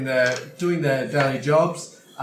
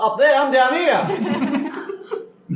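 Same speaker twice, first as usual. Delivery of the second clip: very high, very slow little-man halfling voice; 12 semitones higher, 3 dB louder than usual. Voicing a halfling who spots a climber on the ropes: halfling man calling out. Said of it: "a little halfling man spots you... He goes".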